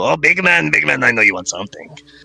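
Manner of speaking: high goblin market-barker voice, hawking. Voicing a goblin who points at a player: goblin voice. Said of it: "The goblin that was just yelling at Enyo starts pointing at you".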